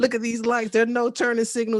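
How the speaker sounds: put-on yelling. Retelling a phone video about traffic: imitating own yelling. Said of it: "yelling into my phone".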